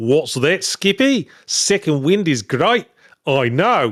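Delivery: put-on, high South African accent creeping in late. Reading out a viewer's two-dollar super chat on the stream, in a South African accent. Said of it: "That was my South African accent".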